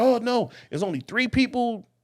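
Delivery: adamant, high-pitched screaming rant at full lungs. Retelling a heated argument on a show: imitating Brandon screaming. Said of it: "He's screaming to the top of his lungs".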